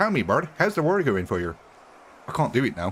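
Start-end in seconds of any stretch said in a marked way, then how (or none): 0.0-1.6 put-on Canadian accent. Speaker tries to redo a one-time character voice: put-on Canadian accent. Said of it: "we do not me- mention our Canadian accent".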